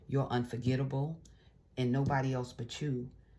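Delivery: normal talking voice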